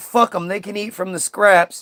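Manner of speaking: put-on angry voice. Retelling a story as a joke, imitating a pissed-off Jesus. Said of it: "Jesus was all pissed off and was like".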